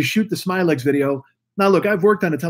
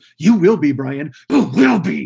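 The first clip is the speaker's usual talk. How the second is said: put-on villain voice, yelling. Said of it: "he fucking yells at him".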